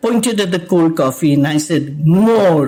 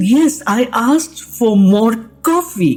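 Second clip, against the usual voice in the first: put-on high, fed-up, exasperated tone; 5 semitones higher than usual. Retelling correcting a server about an order: retelling own exasperated reply. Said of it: "I'm talking in exasperated English".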